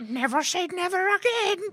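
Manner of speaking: shrill, very high, loud woman's voice. Retelling what a wife said: female version of Connery's voice. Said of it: "That was my female version of his voice".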